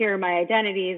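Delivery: ordinary delivery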